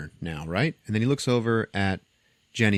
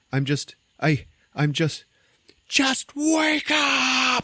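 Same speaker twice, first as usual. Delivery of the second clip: mock stammering scream, very high, slow, rising; 3 dB louder than usual. Retelling a movie scene where a character screams at a body: imitating a scream. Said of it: "as he screams this into her face".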